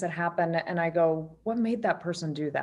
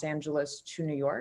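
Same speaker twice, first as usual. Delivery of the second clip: normal talking voice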